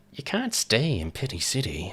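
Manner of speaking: swooping, swinging cartoon villain voice. Quoting a passive-aggressive woman talking to her staff: Joker voice. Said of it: "I just did a Joker impression".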